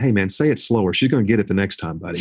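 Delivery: ordinary talk, nothing marked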